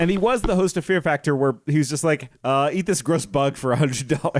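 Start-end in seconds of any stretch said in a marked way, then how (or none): none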